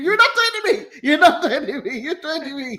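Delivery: high, shrill, repeated all-out screaming. Retelling a wrestling segment as a sitcom character: imitating Charlie screaming. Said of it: "Charlie was just screaming".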